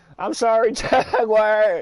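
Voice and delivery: high voice, laughing and giggling.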